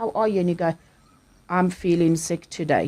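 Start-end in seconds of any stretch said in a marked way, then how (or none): 1.5-2.9 dead-level, flat, toneless monotone delivery. Acting out someone answering that they feel sick: flat tone. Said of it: "it was just that flat tone".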